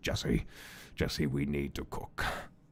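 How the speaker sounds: drops into a breathy whisper. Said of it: "You just do the voice like".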